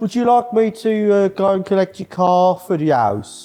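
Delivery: mock Birmingham accent. Speaker retells what the local towist offered, imitating Lewis's Brummie accent. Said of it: "Lewis is our local Brummie towist".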